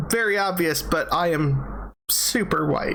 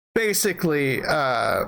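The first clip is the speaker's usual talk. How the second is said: ordinary talk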